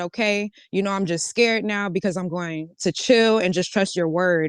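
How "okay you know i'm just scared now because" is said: plain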